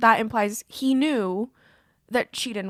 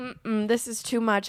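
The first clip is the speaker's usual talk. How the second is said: ordinary delivery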